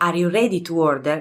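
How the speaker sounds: ordinary delivery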